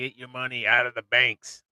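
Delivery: animated sailor character voice. Quoting a gentleman watched yesterday, in a Popeye-like voice. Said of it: "Like Popeye?".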